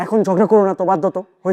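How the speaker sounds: high, fast, defensive voice.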